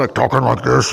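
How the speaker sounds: alien-like, Martian-sounding radio voice. Explaining faulty radio capacitors, demonstrating a Martian-sounding radio voice. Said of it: "it sounds like it's got Martian voice".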